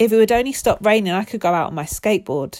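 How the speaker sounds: ordinary delivery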